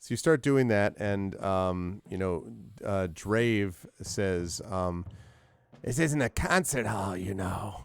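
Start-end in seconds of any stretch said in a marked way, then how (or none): 5.8-7.8 strange nasal, almost raspy voice. Game master voicing a masked character; Drave's strange nasally raspy voice. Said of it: "He has a strange, nasally, almost raspy voice".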